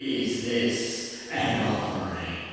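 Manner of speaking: soft, disembodied voice seeming to come from all around. Retelling a moment where a voice from all around the room speaks. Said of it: "this omnipresent voice from all around the room".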